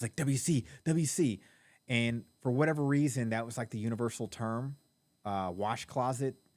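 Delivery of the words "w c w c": very slow, drawn-out, panicked pleading tone. Retelling his own panicked moment as people stared, re-enacting screaming. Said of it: "So I started screaming W C".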